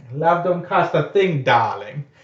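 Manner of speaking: put-on animated cartoon character voice. Showing how the line must be said: Edna voice from Incredibles. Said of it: "the Edna voice from Incredibles".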